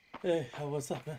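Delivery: winded, panting voice. Greeting another speaker after coming up the stairs, out of breath. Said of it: "Did you just run a mile?".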